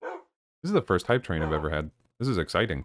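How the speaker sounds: deadpan, level, not sounding excited at all. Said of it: "don't sound excited at all".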